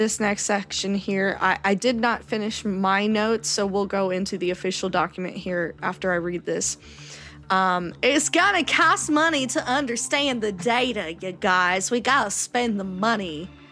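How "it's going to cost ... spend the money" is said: put-on Southern US accent, South Carolina style. Reading notes aloud to co-hosts, in a put-on south carolina accent. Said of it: "What accent is that?".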